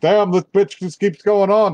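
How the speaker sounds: thick Brooklyn accent. Imagining how Orcott could sound in the dub: Orcott with thick Brooklyn accent. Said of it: "like a thick Brooklyn accent".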